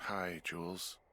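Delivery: drowsy, worn-out, sleepy voice. Answering the radio and greeting Jules, tired voice. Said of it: "you sound tired".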